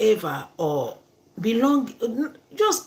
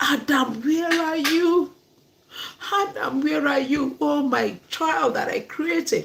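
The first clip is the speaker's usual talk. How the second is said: mock frightened, scared searching call; 4 semitones higher than usual. Retelling God searching for Adam in the garden: imitating God calling out scared. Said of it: "So God was so scared".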